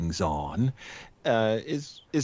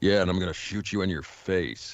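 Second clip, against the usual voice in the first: tough-guy voice, lower pitch; 4 semitones lower than usual. Describing a film character with quippy one-liners, in a generic tough guy voice. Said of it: "he talks like this".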